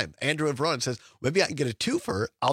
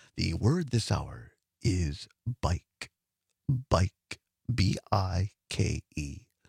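very slow, low, deliberate game-show host delivery; 8 semitones lower than usual. Announcing the hour's mystery word to listeners, in a Password game-show voice. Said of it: "my game show, password voice".

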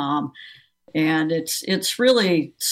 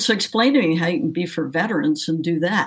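plain

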